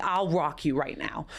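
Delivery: plain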